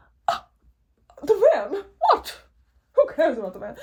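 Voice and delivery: very loud, swooping put-on British accent. Imitating own past bored self about the van: british accent. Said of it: "Had to have a British accent for that".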